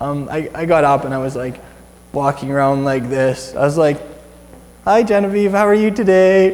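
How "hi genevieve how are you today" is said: stiff, stiff-necked tone. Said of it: "kinda like that".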